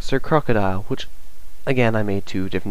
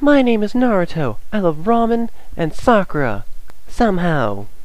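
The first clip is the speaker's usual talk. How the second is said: very high character voice, pushed way up; 10 semitones higher than usual. Showing off voices for characters, the speaker does the first one: Naruto voice. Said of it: "that was my Naruto voice".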